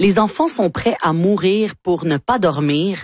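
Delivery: plain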